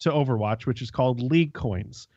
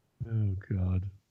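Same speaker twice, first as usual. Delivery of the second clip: low voice, talking through laughter; 5 semitones lower, 6 dB quieter than usual. Speaker reacting to the chat mid-segment; laughing while talking. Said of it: "I'm laughing at the chat".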